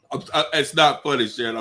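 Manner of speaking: giggly speech, words broken by laughter. Reacting to a grim joke from another speaker, laughing while talking. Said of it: "I'm sorry for laughing".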